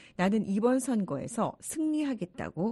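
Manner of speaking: ordinary talk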